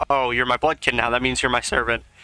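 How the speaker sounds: put-on sassy character voice full of attitude. Retelling a game scene, quoting Vania to the prince: sassy Vania voice. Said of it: "Vania's kinda sassy to the prince".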